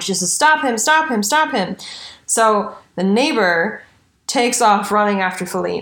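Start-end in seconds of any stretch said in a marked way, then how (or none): 0.3-1.8 put-on, shrill, repeated yell. Retelling a wounded victim's cry to the neighbor: imitating someone yelling. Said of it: "she starts yelling".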